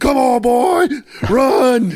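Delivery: mock very high, long stretched-out screaming. Retelling screaming at a boy on a rain-soaked field: imitating own scream. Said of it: "while I'm screaming".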